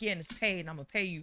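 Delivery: mock happy, sounding very glad and pleased. Retelling how the other speaker offered a paid hosting gig: imitating someone sounding happy. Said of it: "You sounded so happy about it".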